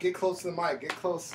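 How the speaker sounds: ordinary talk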